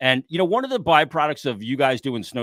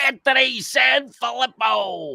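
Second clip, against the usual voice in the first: very high, creaky, rasping announcer voice; 13 semitones higher than usual. Introducing a guest in the Harry Kalas voice. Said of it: "in the great Howard Callis voice".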